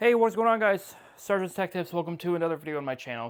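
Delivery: breathless, winded, words between gasps for air. Youtuber greets viewers after carrying a monitor upstairs, out of breath. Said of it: "Sorry I sound out of breath".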